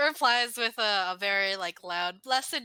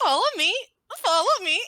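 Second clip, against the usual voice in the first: very high, loud, cracking puberty voice; 10 semitones higher, 6 dB louder than usual. Mimicking someone's follow me line with a broken puberty voice. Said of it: "mimic his follow me with the broken voice".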